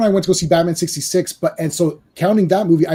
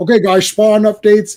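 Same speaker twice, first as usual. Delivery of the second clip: put-on weird voice, higher and louder; 4 semitones higher, 6 dB louder than usual. Imitating Todd McFarlane posting Spawn updates: attempted Todd McFarlane voice. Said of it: "I can't do the voice".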